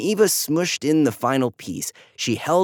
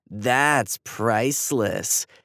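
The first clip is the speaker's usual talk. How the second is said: mocking, taunting, much lower pitch; 2 semitones lower than usual. Narrator reads a character mocking another who broke a star, mocking tone. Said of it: "Andy said in a mocking tone".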